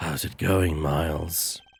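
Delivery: very deep, very low, slow disguised voice. Playing an unknown caller, a player greets another character in a voice-changer voice. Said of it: "I'm just gonna do the voice".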